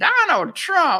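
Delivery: very high, shrill, loud mocking voice. Retelling mocking a politician live on air: mocking Hillary Clinton's voice. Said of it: "I was mocking her".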